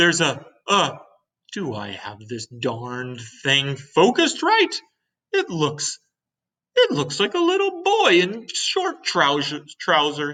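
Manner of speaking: astonished stammer, tripping over words, pitch climbing. A ship's captain looks through a telescope beside his officers; astonished. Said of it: "the captain said. / the astonished captain was standing with a group of his officers".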